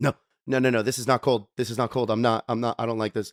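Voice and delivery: mock panic in a panicked woman's voice. On a flight, the speaker acts out a woman sipping water, imitating a panicked woman. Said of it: "She's like".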